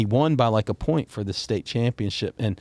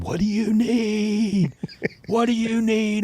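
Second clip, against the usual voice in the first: very high top-of-the-lungs scream, "need" drawn out; 10 semitones higher than usual. Retelling shouting at a wrestler from ringside: imitating screaming. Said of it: "And we're screaming it".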